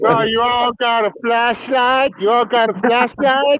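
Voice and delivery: very high put-on Texas cowboy accent. Performer putting on an American accent at the end, Texas cowboy accent. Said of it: "He sounded like a Texas cowboy".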